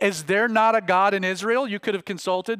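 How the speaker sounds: ordinary delivery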